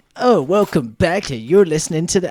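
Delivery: mock animated, energetic announcer voice. Mocking another podcast's repeated intro segment: imitating an animated podcast intro. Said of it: "a animated".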